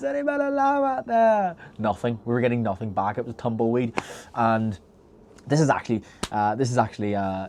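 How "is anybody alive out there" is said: mock, very high, carrying shout. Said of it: "Do you know in the Titanic scene?".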